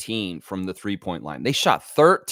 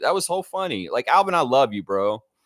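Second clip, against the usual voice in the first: usual speaking voice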